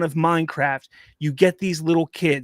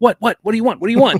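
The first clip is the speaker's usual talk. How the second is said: high, loud, wild, rambunctious dog voice; 5 semitones higher, 8 dB louder than usual. Imitating his wild dog running to the gate when called: voicing a rambunctious dog. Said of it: "start, like".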